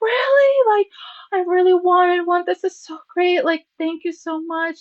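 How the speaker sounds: high, loud, thrilled, excited gushing.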